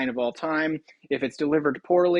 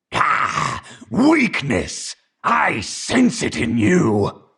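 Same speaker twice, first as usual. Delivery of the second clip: throaty evil demon voice, louder; 5 dB louder than usual. Voicing an abyss demon character for a sample read: Cruz throaty evil voice. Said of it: "that was a throaty, evil sounding voice".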